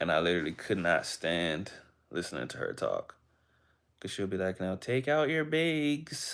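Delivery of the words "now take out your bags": put-on Minnesota accent, very high, slow, "bags" stretched long. Mocking her first spanish teacher from minnesota, imitating a minnesota accent. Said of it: "My very first Spanish teacher was from Minnesota".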